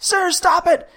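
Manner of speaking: very high, loud frantic scream. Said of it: "when he's screaming".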